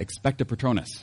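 normal talking voice

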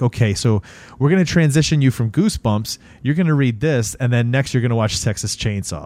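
plain

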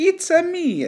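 very high-pitched cartoon Italian accent. Retelling how an old man talks when voicing Mario, speaker does the Mario voice. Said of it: "It's so much fun to talk like Mario".

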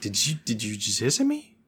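put-on confused, puzzled tone. Retelling a character's line to a hissing goblin: imitating a confused question. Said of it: "She seemed more confused".

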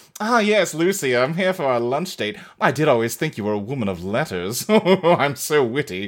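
low, affected, fake mid-Atlantic accent. Recapping a creepy man's entrance, in a put-on mid-Atlantic accent. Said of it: "a put-on mid-Atlantic accent".

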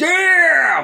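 imitated shouting, very loud. Quoting the first movie's best swear word, real loud: loud shouted "Damn!" as Raph. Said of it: "Real loud".

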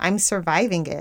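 ordinary talk

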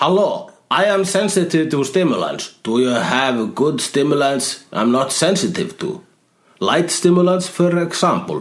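terrible, exaggerated put-on Russian accent. In a joking back-and-forth, the speaker puts on a terrible russian accent. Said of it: "You sound like a really terrible Russian dating video".

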